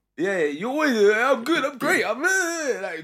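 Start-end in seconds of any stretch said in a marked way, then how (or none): 1.4-2.9 beaming, upbeat, pitched-up voice. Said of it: "grinning from teeth to teeth".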